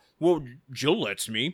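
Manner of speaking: put-on voice, as if mouth full. Retelling a TV scene, imitating Tim talking with mouth full. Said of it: "with a mouthful of crackers".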